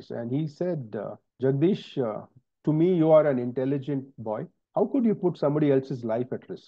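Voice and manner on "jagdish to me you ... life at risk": usual speaking voice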